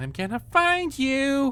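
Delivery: squeaky, very high and drawn-out voice. Reading a horror story, a child monster calling out while running: squeaky voice. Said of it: "it said in its squeaky voice".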